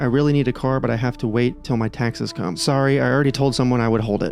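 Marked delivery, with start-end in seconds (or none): none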